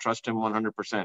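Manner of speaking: normal talking voice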